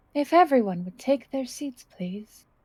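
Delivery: strange disembodied voice. Voicing a disembodied voice asking everyone to sit: weird disembodied voice. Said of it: "the weird voice wants us all to sit".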